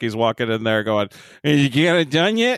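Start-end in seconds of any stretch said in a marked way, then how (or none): 1.4-2.6 mock drunken speech, slower. Retelling Picard walking in to check on Geordi, mock-drunk Picard voice. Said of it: "Picard's drunk as fuck".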